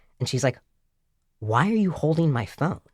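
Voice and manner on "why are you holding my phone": mock baffled, utterly perplexed, confused tone. Retelling how a young woman questioned the speaker: imitating an utterly perplexed woman. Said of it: "looking at me utterly perplexed".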